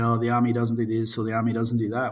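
ordinary delivery

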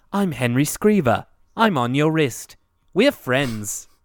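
mock dry, deadpan, matter-of-fact talking-watch voice. Quoting what a talking toy watch says: imitating a deadpan talking watch. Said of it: "So deadpan".

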